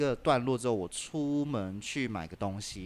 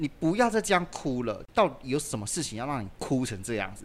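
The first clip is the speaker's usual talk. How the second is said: ordinary talk, nothing marked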